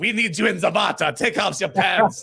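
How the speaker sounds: put-on loud, high Czech-accented photographer voice. Retelling a photo shoot, quoting the photographer: imitating a czech photographer. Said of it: "some Czech photographer is like".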